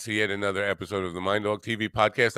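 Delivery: talking a little fast, rushed host voice.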